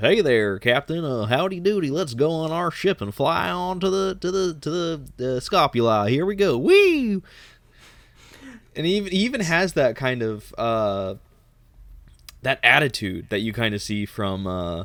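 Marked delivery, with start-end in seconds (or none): 0.0-7.2 put-on carefree Texas accent, pitched up high. Imitating how the actor cast as Alex might talk: Alex with a Texas accent. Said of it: "for whoever they cast to play Alex, just to, to just do that".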